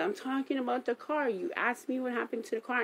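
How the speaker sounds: acted, snapping, heated, high, angry yell. Retelling his answer in the bank, imitating him yelling. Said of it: "And he literally snaps".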